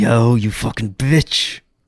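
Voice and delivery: slow drawl with "yo" dragged out. Trying out an impression: Aaron Paul impression. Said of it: "I gotta work on my Aaron Paul".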